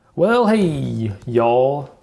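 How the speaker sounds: friendly Alabama Southern accent. A speaker born in Alabama embracing their roots: Southern accent. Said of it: "that was my attempt to to embrace my roots".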